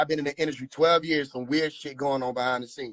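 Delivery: ordinary delivery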